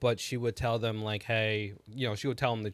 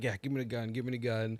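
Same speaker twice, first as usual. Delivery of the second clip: put-on panicked, freaking-out outburst; 4 dB quieter than usual. Retelling a film scene where a character demands the gun: imitating someone freaking out. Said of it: "he was freaking out".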